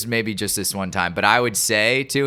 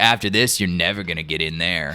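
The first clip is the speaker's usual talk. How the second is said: mocking snide cop voice, lower; 5 semitones lower than usual. Retelling what the other cop said: imitating a snide conservative cop.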